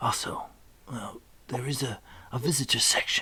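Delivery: muttered whisper under the breath. A character asked for directions to a dark tower turns and whispers under his breath. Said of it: "turns and whispers under his breath".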